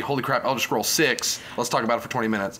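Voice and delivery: ordinary talk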